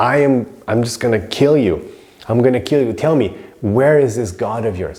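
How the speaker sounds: put-on furious giant's voice. Retelling the story, voicing Hiranyakashipu threatening his son: acting out Hiranyakashipu's rage. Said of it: "Hiranyakashipu is so angry".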